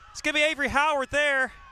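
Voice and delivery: very high, climbing, overloud call. Calling a soccer game: talking too loud. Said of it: "I'm talking too loud".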